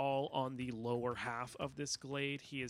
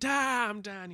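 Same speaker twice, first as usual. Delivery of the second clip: screaming, much higher; 7 semitones higher, 7 dB louder than usual. A game narrator voices a character walking into the fire, screaming. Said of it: "you just hear him screaming".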